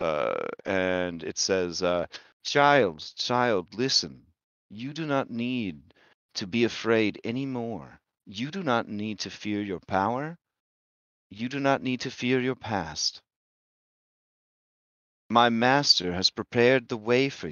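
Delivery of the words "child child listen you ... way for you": doubled voice, two voices speaking as one. Voicing a creature speaking privately to a player: doubled voice, two voices as one. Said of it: "voice that is two voices, but one voice".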